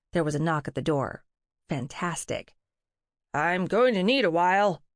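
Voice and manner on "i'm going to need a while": voice disguised to sound like a man. Reading a story, narrator hides behind a door: disguised deeper voice to sound like a man. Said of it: "I disguised my voice, dropping the pitch to hopefully sound like a man".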